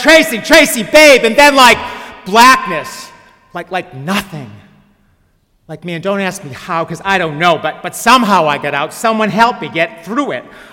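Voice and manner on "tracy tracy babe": very high-pitched, loud calling-out yell. Retelling calling out after being hit in the head: imitating own yelling. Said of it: "And I'm yelling".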